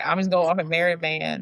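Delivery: normal talking voice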